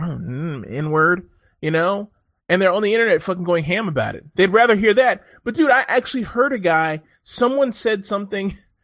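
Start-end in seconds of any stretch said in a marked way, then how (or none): 0.0-1.3 mock muttering, mumbled under the breath. Imitating kids on the internet: imitating muttering under breath. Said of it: "under their breath".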